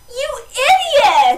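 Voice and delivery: put-on shrieking Valley Girl yell, very loud and very high. Speaker retelling yelling out after seeing a fight, in a valley girl yell. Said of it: "yelling in my Valley Girl voice".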